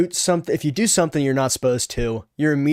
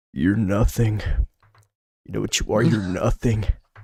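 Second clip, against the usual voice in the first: very deep, bass-heavy, low voice; 5 semitones lower than usual. Emulating how a man with a deep voice spoke to us, very deep voice. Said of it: "He had a very deep voice. ... I'm gonna try to emulate it".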